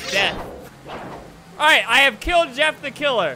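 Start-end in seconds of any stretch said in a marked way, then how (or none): none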